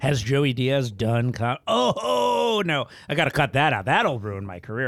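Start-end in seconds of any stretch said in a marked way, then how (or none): none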